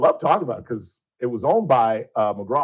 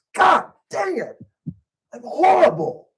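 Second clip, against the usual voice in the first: play-acted exasperated outburst, voice shooting very high; 3 dB louder than usual. Retelling a failed live shot in an empty newsroom, retelling a frustrated yell. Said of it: "I literally just like that".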